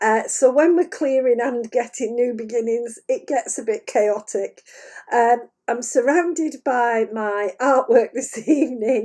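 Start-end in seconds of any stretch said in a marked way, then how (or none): 5.1-9.0 laughing through the words. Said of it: "sorry, I'm laughing".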